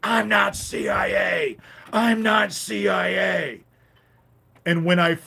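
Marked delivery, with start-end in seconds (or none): 0.0-3.6 mock very slow, dragged-out, high screaming. Retelling how a neighbor screamed in the street: imitating someone screaming. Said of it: "he's screaming at me".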